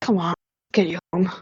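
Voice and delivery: very soft, quiet, barely-there gentle murmur. Voicing a character speaking to someone who shut down, very soft quiet voice. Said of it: "like in a in a quiet voice".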